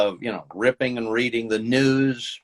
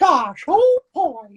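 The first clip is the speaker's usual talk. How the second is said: very high, loud squeaky falsetto; 6 dB louder than usual. Showing how to be in the ballpark for the Mickey voice: Mickey Mouse falsetto voice. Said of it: "so I could kinda do a Mickey".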